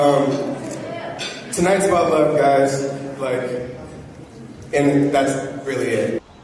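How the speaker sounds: choked-up, tearful voice catching. Welcoming another family into theirs before the crowd, choked up. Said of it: "I'm literally tearing up right now".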